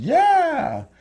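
high, shrill, drawn-out yell on "yeah". Retelling a story where a bike spins out and a guy gets away, retelling a yell. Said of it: "I'm yelling like".

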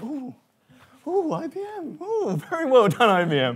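very slow, high, swooping fake awe, acted out. Retelling someone watching a demo: Douglas Rushkoff in mock awe. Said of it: "faux look of awe on your face going".

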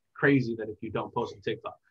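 plain

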